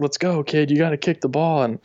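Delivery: mild, urging tone, yelled. Retelling how the ref told the kicker to kick: imitating the ref yelling. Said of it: "he yells at me".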